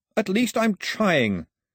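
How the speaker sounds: sudden high yell. Answering a refusal of any bargain, yelled. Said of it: "Mao yelled".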